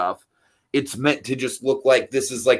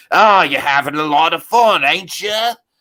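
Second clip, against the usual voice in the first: sinister, threatening, pitched-up voice; 5 semitones higher, 4 dB louder than usual. Describing an imagined ride where the coachman speaks: imitating the coachman menacingly. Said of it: "very menacingly".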